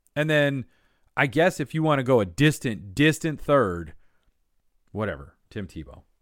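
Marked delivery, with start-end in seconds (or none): 5.5-6.0 scornful, disdainful, contemptuous, dismissive delivery. Ranking the biggest impact, naming a distant third: disdainful on Tim Tebow. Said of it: "The disdain in my voice there".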